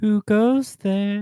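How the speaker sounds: high, eerie, spooky ghost voice. In a tabletop game, calling out at limping footsteps approaching: sounding like a ghost. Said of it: "Is that intimidating to sound like a ghost?".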